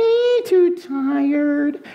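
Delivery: very high, slow, sleepy piglet puppet voice.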